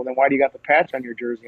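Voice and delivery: ordinary talk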